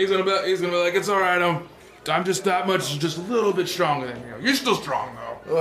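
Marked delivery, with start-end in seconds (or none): none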